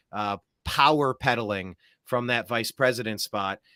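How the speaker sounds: normal talking voice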